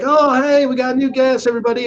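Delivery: high, friendly, cheery hostess voice.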